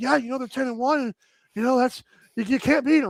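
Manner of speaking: casual, offhand athlete voice, full of fillers. Retelling what the goalie said after a win: imitating Kyle the goalie. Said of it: "that's my Kyle, the goalie impression".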